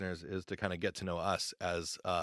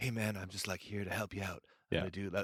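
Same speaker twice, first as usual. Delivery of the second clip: soft-spoken, easy, non-threatening tone; 4 dB quieter than usual. Retelling how a podcast guest talked, soft non-threatening tone: Nick Yaris impression. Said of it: "that's my Nick Yaris impression".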